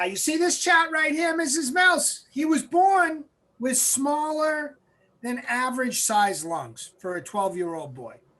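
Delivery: put-on nasal Massachusetts accent. Retelling a man showing a chart to Mrs. Mills, in a nasal Massachusetts accent. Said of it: "talked in a nasally Massachusetts accent".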